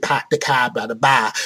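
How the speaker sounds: terrible put-on Massachusetts accent attempt. Showing how locals in Massachusetts expect you to talk, in a terrible Massachusetts accent. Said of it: "that was a terrible, terrible, terrible Massachusetts accent".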